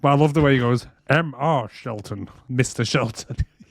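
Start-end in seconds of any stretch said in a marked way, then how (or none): 1.1-3.4 deliberately bad spy voice, slow and drawn out. Retelling a scene where a character imitates James Bond: bad James Bond impression. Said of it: "he does a shit James Bond impression".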